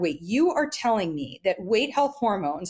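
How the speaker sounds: ordinary talk, nothing marked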